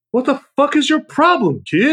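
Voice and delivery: rude outburst, pitched very high. Host discussing Christmas movies on the show delivers a line, Bad Santa impression. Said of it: "Thank you for your Bad Santa impression".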